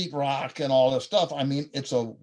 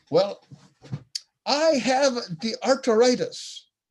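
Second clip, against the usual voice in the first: put-on light Jamaican accent, woman's voice, pitched up; 9 semitones higher, 3 dB louder than usual. Speaker quotes Sister B answering their question: Sister B's Jamaican accent. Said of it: "the beautiful Jamaican accent, I won't represent it very well".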